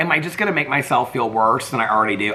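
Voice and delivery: ordinary talk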